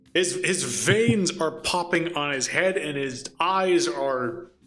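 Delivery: ordinary delivery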